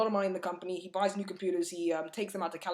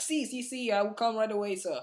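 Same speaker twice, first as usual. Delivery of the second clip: terrible put-on Brazilian accent; 3 semitones higher than usual. Retelling a story about a company investment, quoting Eduardo in a terrible Brazilian accent. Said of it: "that was a terrible accent".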